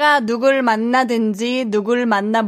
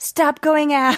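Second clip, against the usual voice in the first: put-on nagging older-sister scolding; 4 semitones higher than usual. Suggesting another way to say the lyric, imitating a nagging older sister. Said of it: "like the older sister and being like".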